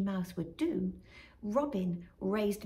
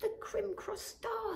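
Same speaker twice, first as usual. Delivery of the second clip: very high, thrilled, delighted voice; 13 semitones higher, 4 dB quieter than usual. Narrator reading a character's reply in a children's story, delighted. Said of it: "said the Magpie, delighted".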